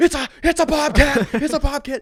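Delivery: shrill, very high, loud screech. Retelling a video of a man who picks up a bobcat, imitating a man screaming. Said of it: "this man just starts screaming".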